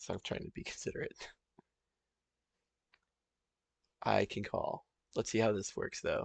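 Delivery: low-volume, hushed talking. Streamer whose roommate is in the room, talking quietly. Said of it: "which is why I'm kind of talking quiet".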